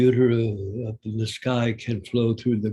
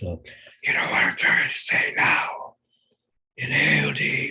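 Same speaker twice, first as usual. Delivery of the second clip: loud, theatrical, projected stage whisper; 3 semitones higher than usual. A theater person demonstrates a stage whisper to the other speaker: loud stage whisper. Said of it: "that's really called a stage whisper".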